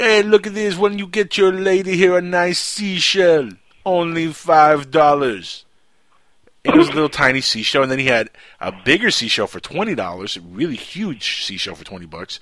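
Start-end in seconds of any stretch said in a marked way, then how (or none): 0.0-5.6 put-on Jamaican accent, loud and high. Retelling a seller's pitch to him and his lady, imitating a Jamaican seller. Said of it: "some Jamaican dude with dreads".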